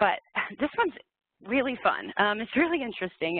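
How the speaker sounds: dripping sarcasm, feigned delight, sing-song enthusiasm. Describing an upcoming H-1B rule change to listeners: sarcastic. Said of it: "I hope you, you feel my sarcasm".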